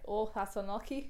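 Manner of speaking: bad put-on old local Irish accent. Telling a story, quoting an old irish person at an inn, old irish accent. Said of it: "Pretend I didn't do an accent".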